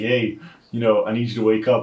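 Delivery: plain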